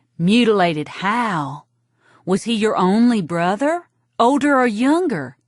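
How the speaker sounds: really intense, drawn-out delivery. A narrator voices Evie questioning the storyteller, really intense. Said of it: "It's not just my wanting to be a glamorous fashion model, [name] would say. / She'd clutch her little sponge and say, / And really intense, [name] would say, "Mutilated how? / Audiobook read by [name]".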